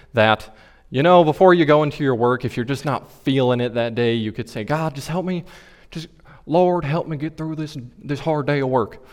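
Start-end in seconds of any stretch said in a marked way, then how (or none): 4.7-8.9 relaxed, friendly, chatty preacher-style delivery. Showing how he says you are supposed to pray, Joel Osteen impression, casual. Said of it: "That was my Joel Osteen impression".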